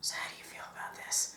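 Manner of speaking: relaxed, offhand, casual, very quiet whisper. Recounting whispering to the listener during a movie: retelling a casual whisper. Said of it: "casually whispered to you".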